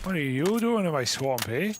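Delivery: just a slight hint of Irish accent. Discussing Shrek's planned Canadian accent, doing his line with a slightly Irish accent. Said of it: "Bit Irish".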